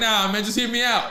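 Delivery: ordinary delivery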